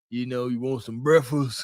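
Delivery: deep and robust tone. Joking about the deep voice she expected: Melvin from Baby Boy voice. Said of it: "Freaking Melvin off of Baby Boy type ish".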